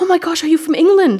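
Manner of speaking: high, loud excited gushing. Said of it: "this woman behind the checkout says".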